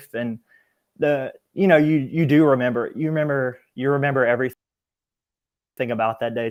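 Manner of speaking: emotional, halting voice full of feeling, repeating itself. Recalling the day someone close took his life, the speaker getting emotional. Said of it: "Sorry, getting emotional".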